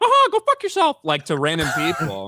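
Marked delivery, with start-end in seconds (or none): 0.0-1.0 very high, squeaky cartoon voice. Retelling a costumed performer cursing at random people: Mickey Mouse voice. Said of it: "a dude in a Mickey voice being like".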